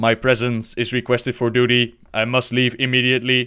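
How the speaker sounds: clumsy, flat, badly done put-on robot voice. Quoting the 5000 model robot's farewell message, in a bad robot voice. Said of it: "That was probably the worst robot voice ever".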